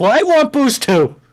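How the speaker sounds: shrill, very high, loud, demanding shout. Answering in character a squeaking figure who demands more booze: yelling back. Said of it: "I'm gonna yell back".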